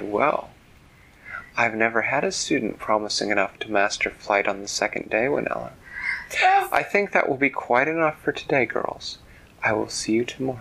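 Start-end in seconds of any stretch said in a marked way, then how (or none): none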